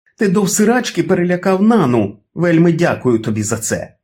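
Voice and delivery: all-out shrill yelling, volume cranked to full. A woman confronts a man right from the start: shouting at full volume. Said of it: "зі старту вімкнула свою гучність на 10".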